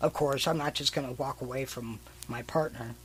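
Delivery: ordinary talk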